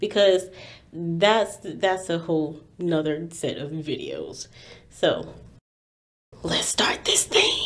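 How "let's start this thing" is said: breathy, hushed stage whisper. Kicking off a video about the Harry Potter films, whispered. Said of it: "I don't know why I whispered that".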